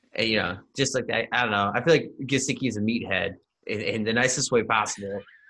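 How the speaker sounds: ordinary talk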